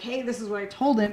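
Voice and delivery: ordinary delivery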